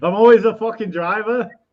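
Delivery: loud, high attempted put-on Australian accent. Joking with friends in a group conversation, put-on aussie accent. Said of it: "was that your Aussie accent".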